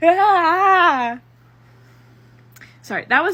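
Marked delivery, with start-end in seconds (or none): 0.0-1.2 high, loud, anguished cry. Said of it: "my impression of my reaction of finishing the fic".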